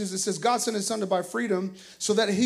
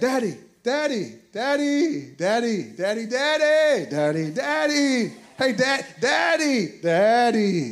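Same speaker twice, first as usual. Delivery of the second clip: put-on little girl voice, slow, drawn-out calling over and over; 2 semitones higher, 3 dB louder than usual. Retelling a girl repeatedly calling for her dad: imitating Kylan calling Daddy. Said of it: "And she's like".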